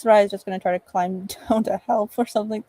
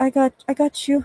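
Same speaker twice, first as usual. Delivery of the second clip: put-on Portuguese-accented voice; 4 semitones higher than usual. Asked to give a female character's voice acting in a game: Portuguese accent. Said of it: "give us the voice acting".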